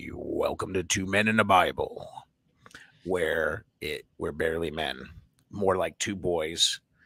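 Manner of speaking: very low, deep, hoarse, raspy voice. Host records a new show introduction while losing their voice, deep and raspy. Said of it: "I got that deep, raspy voice".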